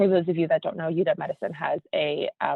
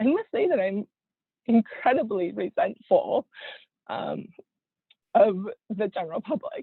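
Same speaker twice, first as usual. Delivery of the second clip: speaking through strong emotion, voice pitched up; 5 semitones higher than usual. Speaker responding to others' comments about being exhausted, getting really emotional. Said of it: "I'm getting really emotional".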